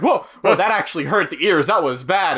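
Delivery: ordinary delivery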